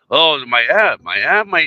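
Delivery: very slow, stumbling, faltering put-on voice. Retelling how someone frets about his app: Dave Weiss impersonation. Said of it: "I can't do it".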